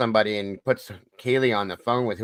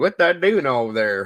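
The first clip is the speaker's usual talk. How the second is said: imitated Southern accent; 3 semitones higher than usual. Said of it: "that Southern accent into it".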